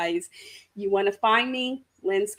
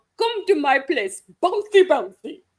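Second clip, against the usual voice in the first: loud, high, silly fake Russian accent; 7 semitones higher, 6 dB louder than usual. Suggesting what the other speaker should say to her, in a stupid russian accent. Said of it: "In a stupid Russian accent".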